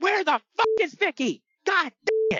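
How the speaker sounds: put-on very high, angry shouted outburst. Retelling a wrestler's angry shout after being pulled down: imitating a shout. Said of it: "Eddie shouts".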